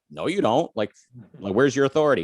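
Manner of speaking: ordinary talk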